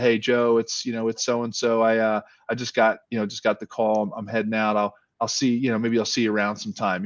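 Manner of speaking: ordinary talk, nothing marked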